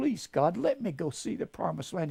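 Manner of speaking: tearful begging pleading voice. Retelling Moses begging God to see the land: imitating a tearful plea. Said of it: "begging and pleading with the Lord in tears".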